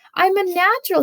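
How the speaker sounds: squeaky little bird voice, high and loud. Reading a story aloud, a gosling boasts about flying: squeaky voice. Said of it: "he squeaked".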